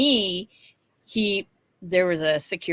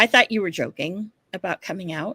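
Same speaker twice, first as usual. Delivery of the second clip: mock whispering. Retelling what he said while hugging: imitating someone whispering. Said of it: "whispering in my ear".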